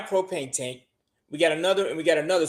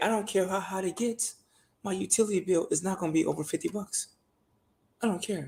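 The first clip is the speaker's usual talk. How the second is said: hushed, secretive half-whisper; 7 dB quieter than usual. Talking about their house so the neighbors won't hear: half-whispering. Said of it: "I'm whispering like I don't want my neighbors to hear".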